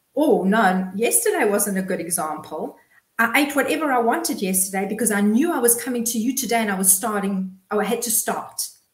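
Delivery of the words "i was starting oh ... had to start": ordinary talk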